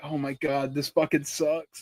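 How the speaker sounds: mock freaking out. Retelling a moment of smelling something awful: retelling freaking out. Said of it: "freaking out".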